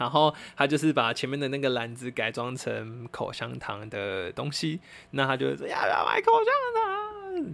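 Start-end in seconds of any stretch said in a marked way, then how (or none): 5.7-7.5 very high, pleading voice. Speaker imitates a gum seller on a red e-scooter, imitating a pleading gum seller. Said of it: "这样很哀求。".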